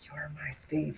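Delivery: very quiet, soft whisper. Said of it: "I just whispered to Denton".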